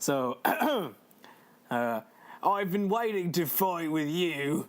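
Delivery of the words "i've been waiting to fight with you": put-on Australian accent. Reading a game character's line, a speaker attempts an Australian accent. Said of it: "in my w- best Australian accent".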